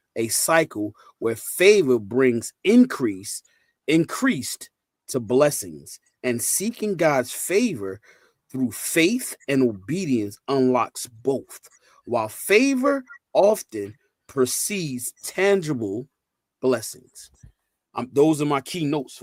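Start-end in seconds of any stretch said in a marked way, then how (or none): 0.2-17.3 slow, deliberate reading aloud. Reading keynotes aloud so everybody can understand them, reading slowly. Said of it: "I'm gonna read this slow".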